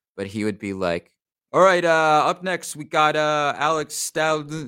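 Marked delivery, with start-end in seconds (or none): 1.5-4.7 put-on very confident, loud New York accent. Recalling the sound guy who couldn't read: imitating John's confident New York voice. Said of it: "just a very confident New York guy".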